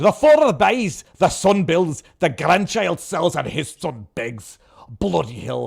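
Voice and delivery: loud, put-on Scottish accent, read out in full. Rereading a saying from a screen, this time in a Scottish accent. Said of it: "just read the, the in the Scottish".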